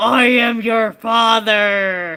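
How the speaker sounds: very slow, drawn-out delivery, "father" stretched long. Answering a request for a Darth Vader impression: Darth Vader impression. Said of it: "can you do a Darth Vader impression?".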